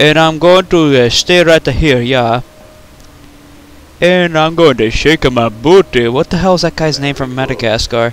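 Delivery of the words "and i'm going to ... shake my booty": laid-on Jamaican-style accent. Making fun of the lemur from Madagascar, in a put-on Rastafarian man voice. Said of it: "now I'm going to talk like the Rastafarian man".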